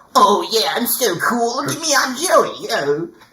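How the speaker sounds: cocky, show-off voice. Describing a voice actor's typecast roles, mocking a cocky show-off. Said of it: "cocky character who has the".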